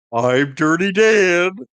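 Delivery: shrill, booming cartoon yell, high and loud. Quoting a cartoon line for the others: Patrick voice. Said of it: "I do a better Patrick voice".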